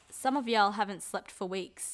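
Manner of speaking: usual speaking voice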